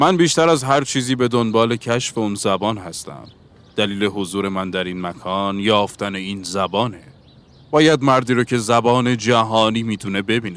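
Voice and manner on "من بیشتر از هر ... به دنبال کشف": usual speaking voice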